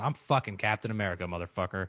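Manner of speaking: put-on defiant, cocky tone full of swagger. Retelling a scene where a character answers without asking permission: imitating a defiant retort. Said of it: "he says it as if he was telling the dude to go fuck himself".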